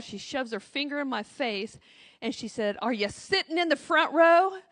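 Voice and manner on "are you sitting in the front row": put-on little Southern drawl, sweetly stretched. Retelling a woman on the plane confronting the speaker, imitating her southern drawl. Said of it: "her little southern drawl".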